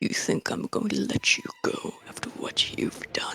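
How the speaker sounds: very quiet, hushed guttural whisper, growl-like. As the game's narrator, voicing the boss confronting the players, in a guttural voice. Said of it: "say in his guttural voice".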